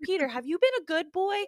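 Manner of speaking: put-on British accent. Retelling a video of the fairy godmother meeting Peter Pan, Fairy Godmother British accent. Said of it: "why am I doing a British accent?".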